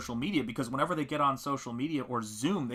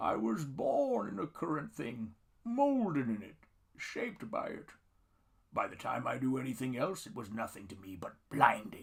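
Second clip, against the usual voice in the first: swinging, swooping put-on masked movie villain voice; 3 dB quieter than usual. Reading out a parody movie line: Tom Hardy Bane voice. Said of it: "in my best Tom Hardy Bane voice".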